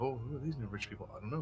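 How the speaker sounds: hushed whisper. Voicing townsfolk who whisper about the newcomers on the street: whispering townsfolk. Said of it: "You get whispered like that".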